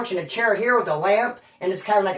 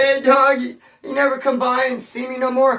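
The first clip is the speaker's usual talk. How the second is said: high, weepy, tearful crying voice, acted out; 5 semitones higher than usual. Retelling a friend crying while complaining he never visits: imitating Daniel crying. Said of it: "He was crying".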